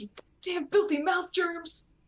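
play-acted, very high-pitched, enraged angry shriek. Imitating an always-angry character brushing his teeth: screaming like Bakugo. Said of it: "just screams".

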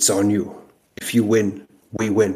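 put-on polished, businesslike French accent. Retelling what he told the speaker before the match: French-accented English. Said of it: "very professional, you know, French accented English".

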